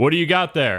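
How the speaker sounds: very high, loud yell calling across a distance. A game master voices a hooded figure who spots a player's hand in the dirt, yelling over. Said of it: "he yells over and says like".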